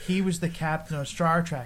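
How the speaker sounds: ordinary talk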